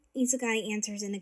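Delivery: ordinary delivery, nothing marked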